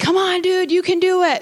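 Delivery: high, encouraging shout. Recounting a long hike, re-enacting yelling back to him; retelling a yell. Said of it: "I'm yelling back to him".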